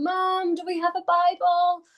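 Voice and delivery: stretched high-pitched shout. Retelling calling up the stairs to mum: imitating own shout up the stairs. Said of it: "but I shouted up".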